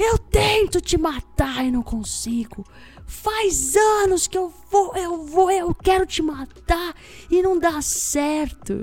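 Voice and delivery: put-on acted, high, drawn-out ranting drunken yelling. Telling of a drunk across the street, voicing him: retelling a drunk's shouting. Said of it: "E ele gritava assim".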